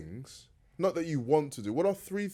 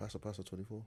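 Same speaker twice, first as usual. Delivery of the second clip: lower, quieter whisper; 6 semitones lower, 18 dB quieter than usual. Talking with friends about films, whispering. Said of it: "Why are you whispering?".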